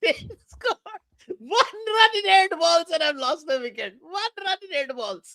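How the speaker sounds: very high-pitched, talking through helpless laughter. Describing a bad start to the innings, laughing while talking. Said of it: "I just can't stop laughing".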